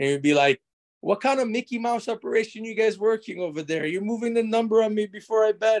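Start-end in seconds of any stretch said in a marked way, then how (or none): 1.0-5.8 put-on heavy, laid-on New York accent, pitched up. Retelling what the guy at Pinnacle would say in the conversation, thick New York accent. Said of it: "this New Yorker guy with a thick New York accent".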